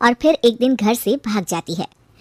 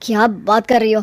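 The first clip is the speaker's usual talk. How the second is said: plain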